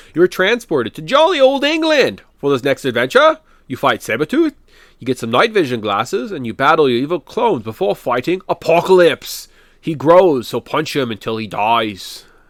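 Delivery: clumsy, bad put-on English accent. Describing the adventure in stage three, Excalibur Castle, in a bad English accent. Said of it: "I'm sorry for every English person ever".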